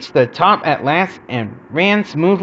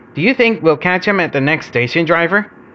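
plain

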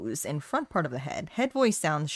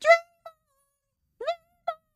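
very high, loud head-voice wail. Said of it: "Head voice is like Aerosmith and Dream On".

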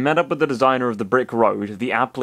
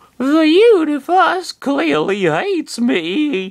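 very high, loud, shrill, sing-song, swooping whine; 5 dB louder than usual. Narrator reading Chris's complaint, as Chris whining in an even younger voice. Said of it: "whined Chris with an even younger voice".

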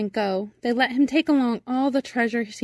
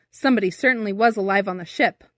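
usual speaking voice

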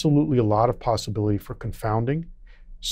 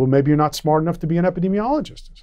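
put-on joking tone, higher; 6 semitones higher than usual. Retelling what they said when asked for a reference proving it works, imitating a joking remark.

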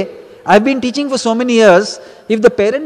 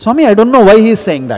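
vigorous, angry, indignant and annoyed delivery; 4 dB louder than usual. Retelling an annoyed reply to Swami: retelling an angry, annoyed reply. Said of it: "with a little bit of vigor in my voice and anger and annoyance in my voice".

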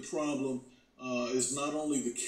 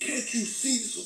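angry put-on voice, higher pitched; 10 semitones higher than usual. Retelling a cop jumping out after a parking bump: imitating a cop cursing. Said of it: "he started cursing at me".

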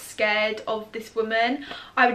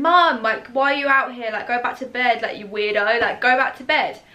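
calling out at full volume, really loud; 4 dB louder than usual. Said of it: "I was being really loud".

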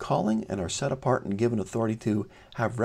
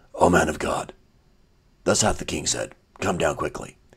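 very low, deep, put-on superhero voice; 7 semitones lower, 3 dB louder than usual. Reading a Bible passage, the captain's words in a Batman voice. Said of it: "I'll do it to my Batman voice".

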